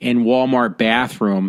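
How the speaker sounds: usual speaking voice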